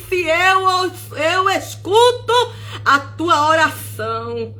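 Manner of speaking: play-acted, held-back, mild proclaiming cry. Retelling the words God cried out while a sister prayed in tongues, retelling a loud cry. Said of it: "E Deus bradou e disse".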